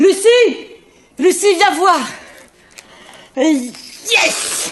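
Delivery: shouting. Calling lucie to come and see: yelling. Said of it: "Pourquoi tu hurles comme ça ?".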